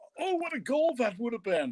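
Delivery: put-on very high-pitched, exclaimed British accent. Recalling a soccer commentator's remembered line: Toby Charles British accent. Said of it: "he had that British accent".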